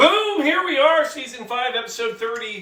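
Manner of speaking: very high, loud yelled delivery. Opening season five, episode thirty-five from home, yelling. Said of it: "Why do I yell?".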